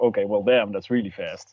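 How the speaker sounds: ordinary talk, nothing marked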